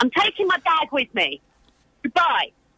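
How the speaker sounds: high-pitched, showy, performative chatter. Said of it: "keep talking loudly on the phone".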